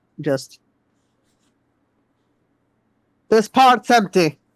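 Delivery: calling out. A player's character calling out aboard a ship, raising her voice a little. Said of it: "She's gonna raise her voice a little bit".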